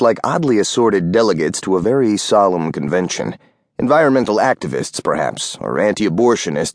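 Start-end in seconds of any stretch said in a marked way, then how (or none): none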